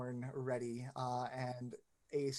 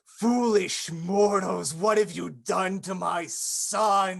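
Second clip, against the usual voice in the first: very loud, booming, high-pitched bellow, "son" drawn out; 7 semitones higher, 16 dB louder than usual. Narrating a skull-tipped staff that bellows at the mortals in the room: bellowing. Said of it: "he bellows in the room".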